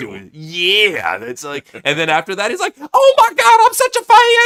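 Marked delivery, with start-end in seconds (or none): 2.8-4.5 put-on gushing fan voice, higher and louder. Retelling Jim Cornette's podcast reaction: imitating Jim Cornette fangirling. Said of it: "he literally fangirled out over that shit".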